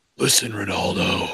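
slow put-on growling voice.

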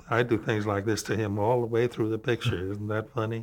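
dead-level, flat, deadpan monotone. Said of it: "Keep your voice flat and level".

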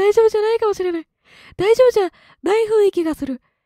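voice cracking upward. Worried that Sakura is not okay, speaking with the voice cracking upward. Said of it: "声が上ずった状態で今喋ってる".

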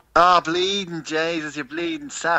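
thick Dublin accent. Asked by the others to give a Dublin accent, doing a strong Dublin accent. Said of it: "That's a Dublin accent".

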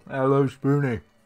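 talking with mouth full of food. Eating during a taste test, greeting someone while talking with mouth full. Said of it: "rude to eat with your mouth full".

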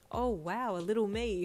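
amused, through a chuckle. Hawks reacts to the doctor's news, with a chuckle. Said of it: "Hawks said with a chuckle".

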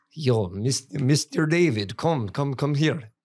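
Serbian-accented English. Speaker responding to a request for a Serbian accent, Serbian accent. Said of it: "Give me a Serbian accent".

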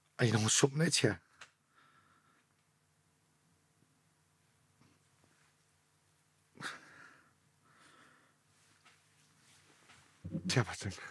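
overcome, choked-up voice. Retelling how a paramedic said he saved his mate's life: emotional, choked up. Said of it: "Why does it get you so emotional".

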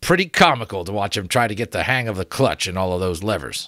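plain reading voice

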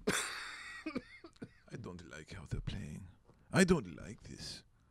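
fake European accent, soft and breathy. Making his european face while watching hockey, speaker does a european accent impression. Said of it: "That's my European impression".

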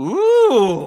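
very loud, long, drawn-out, thrilled, excited ooh. Asked to imitate a viewer's excited ooh: imitating an excited ooh. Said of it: "do the impression of Michael's ooh for us".

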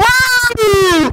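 put-on high squealing child voice.

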